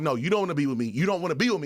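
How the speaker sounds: put-on tearful, pleading voice. Retelling what a crying partner said: imitating someone tearful. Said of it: "she's starting to really, like, tear up".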